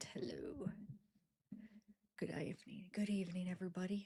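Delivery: whispering. Arriving late and greeting everybody, whispering. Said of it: "I don't know why I'm whispering".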